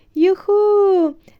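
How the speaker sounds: delighted, very high, drawn-out joyful squeal. A passenger on a flying taxi as it descends over a wood; joyful squeal. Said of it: "радісно заверещала Еллі".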